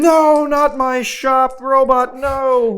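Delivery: very slow, loud, high, stretched-out scream. A tabletop player acts out a scream during the game, screaming. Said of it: "And I'll scream".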